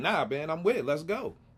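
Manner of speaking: ordinary talk, nothing marked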